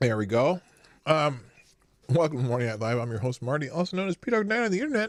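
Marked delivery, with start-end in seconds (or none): 2.1-5.1 fast chatter through a mouthful of food. A host opening his morning live show to viewers, talking with mouth full. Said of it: "I have a mouthful of food".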